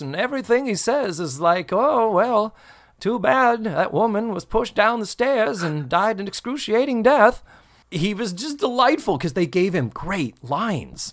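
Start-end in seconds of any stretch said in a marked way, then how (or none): 1.7-7.4 odd, pitched-up Maine dialect and inflection. Quoting Mister Lazzaroni from the episode: Mister Lazzaroni's weird Maine inflection. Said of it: "weird Maine, uh, inflection and dialect to his voice".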